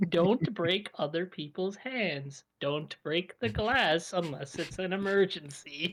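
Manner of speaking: ordinary talk, nothing marked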